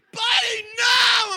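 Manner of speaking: very high, shrill, loud scolding scream. Retelling catching their dog on top of a small dog, retelling a scream. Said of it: "I'm like screaming".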